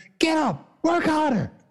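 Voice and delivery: shrill, high, drawn-out barked yelling. Act out David Goggins coming in all of a sudden and yelling at a man, imitating David Goggins yelling. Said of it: "he starts yelling at him".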